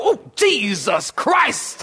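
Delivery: pained, almost disdainful tone. Imitating someone who just stubbed their toe: imitating someone cursing in pain. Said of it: "they even say it with that, uh, disdain almost".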